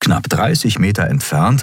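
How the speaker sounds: plain reading voice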